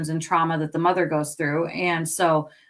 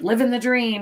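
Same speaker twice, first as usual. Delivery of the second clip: acted ironic, sarcastic tone, slightly higher pitch; 5 semitones higher than usual. Imitating unhappy people who are just going through the motions: imitating a sarcastic tone.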